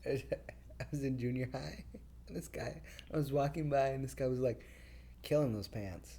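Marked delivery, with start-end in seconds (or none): 5.2-6.2 mock sneering, sarcastic, mocking tone. Retelling what a guy in junior high said, imitating a mocking tone. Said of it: "he said it like that with that intonation. And that's an technically an insult with his intonation".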